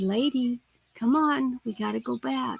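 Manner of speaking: very quiet, soft, hushed, barely-there voice. Retelling calling the dog back while a deer watched: very quiet voice. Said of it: "in a very quiet voice".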